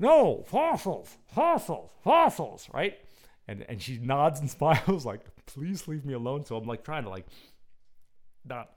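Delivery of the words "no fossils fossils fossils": very high, very loud voice, muffled as through cloth. Retelling talking to a woman while wearing a mask; muffled mask voice. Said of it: "I'm trying to do the mask voice and put my shirt over my mouth".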